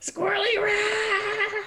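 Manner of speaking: very high, loud, shrill war cry, "rat" stretched out. Voicing a character leaping into a fight: character screaming. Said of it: "just screaming".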